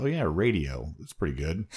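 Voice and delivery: normal talking voice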